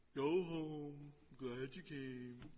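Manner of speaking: mock dull preacher voice, slow and lifeless.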